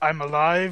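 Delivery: plain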